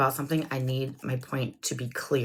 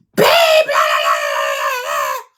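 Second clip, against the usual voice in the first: put-on yelling voice; 7 dB louder than usual. Retelling a conversation with a partner who says what: imitating own yelling. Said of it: "So I have to fucking yell".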